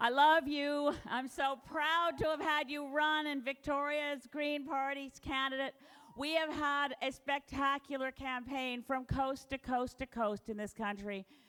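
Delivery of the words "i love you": loud, full, clear declaration. Telling a candidate during a campaign speech: really loud and really clear. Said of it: "I have to say it really loud and really clear".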